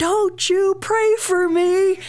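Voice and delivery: put-on very high, slow, loud screaming child voice.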